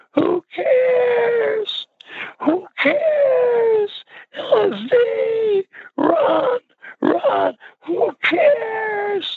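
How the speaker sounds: put-on very high, very drawn-out screaming. Recounting a girl screaming into a microphone, imitating a girl screaming. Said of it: "this girl started screaming".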